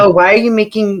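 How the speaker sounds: usual speaking voice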